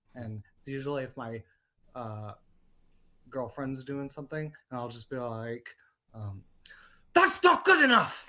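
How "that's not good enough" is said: very loud, high-pitched, belted delivery. Showing the one Will Turner line often used: Will Turner impression. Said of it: "there's only one of Will Turner that I ever do".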